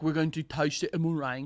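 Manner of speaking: put-on French accent. Imitating French people about to taste a meringue: put-on French accent. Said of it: "literally not an accent that exists in the world".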